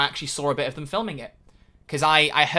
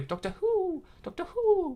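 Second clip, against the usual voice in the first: very high, swooping, owl-like hooting; 6 dB quieter than usual. Mimicking how someone said Doctor Who: saying Doctor Who like an owl. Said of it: "like he's a, a an owl".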